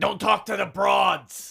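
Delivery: put-on scream, dragged out with a rough edge. Retelling a breakfast scene in LA: imitating Freddie Blassie screaming. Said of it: "Freddie Blassie is screaming. He's like".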